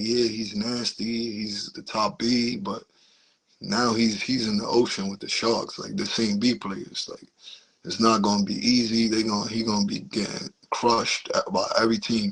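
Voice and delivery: ordinary talk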